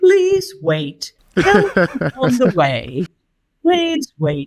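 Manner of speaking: small, sing-song automated machine announcer voice. Speaker imitates the voice that comes on at self-checkout, little machine voice. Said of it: "little voice that comes on".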